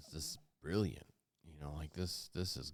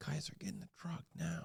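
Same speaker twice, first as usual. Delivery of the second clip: mild yell, very high-pitched, rough and rasping; 13 semitones higher than usual. Speaker recounts yelling to get them into the truck, retelling a yell. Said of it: "I start yelling. I'm like".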